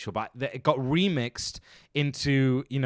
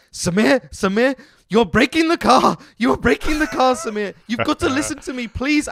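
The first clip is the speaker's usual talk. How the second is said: put-on worried pleading voice, higher and louder; 11 semitones higher, 9 dB louder than usual. Retelling a rally navigator's pleas to the driver: imitating a nervous, pleading navigator. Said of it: "the navigator is getting so nervous and worried and pissed off".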